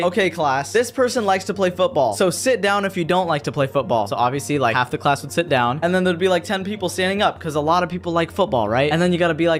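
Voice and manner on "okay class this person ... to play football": usual speaking voice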